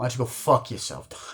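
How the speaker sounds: acted, tough, badass, defiant tone. Retelling a scene where a teased kid snaps back at his mocker, mock-defiant, tough. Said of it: "Spider just gets fucking badass and goes".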